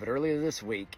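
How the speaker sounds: ordinary talk, nothing marked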